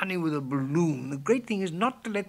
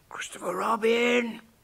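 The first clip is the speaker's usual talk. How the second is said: loud, carrying stage whisper; 3 semitones higher than usual. Narrator reads a character calling down to Christopher Robin from near the honey, loud whisper. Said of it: "said in a loud whisper".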